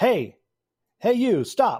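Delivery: loud, high-pitched shout. The narrator voices a man who spots Mogu: shouting. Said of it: "and he shouts".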